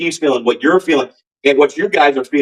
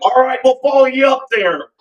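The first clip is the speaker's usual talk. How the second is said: very high-pitched put-on Philadelphia accent; 11 semitones higher than usual. Retelling how a band member agreed to follow him, imitating his Philly accent. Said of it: "I do his perfect Philly accent".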